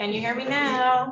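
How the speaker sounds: projected voice.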